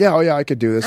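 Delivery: ordinary delivery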